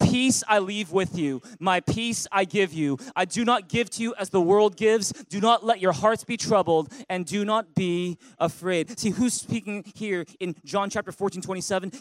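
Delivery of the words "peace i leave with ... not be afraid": big, booming, very loud unison reading. Reading the verse again with the listeners, ten times louder. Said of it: "read it with a big loud voice, like ten times louder".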